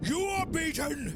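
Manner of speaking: very high, booming, godlike yell. Using thaumaturgy to stop a fleeing foe in the game, retelling a god-like yell. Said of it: "I use thaumaturgy and I yell".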